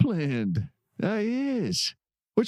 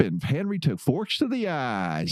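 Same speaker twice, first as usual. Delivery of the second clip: normal talking voice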